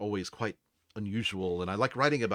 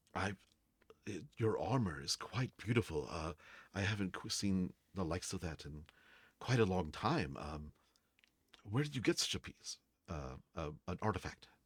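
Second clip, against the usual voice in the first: sheepish, embarrassed, quieter; 6 dB quieter than usual. A game master voices an older man approaching a player's character, embarrassed. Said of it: "he kind of comes up like embarrassed and says".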